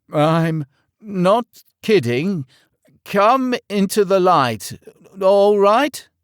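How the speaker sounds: trembling, quivering voice, high and slow. Reading a story aloud, a frightened knight calls out: quivering voice. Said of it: "called out in a quivering voice".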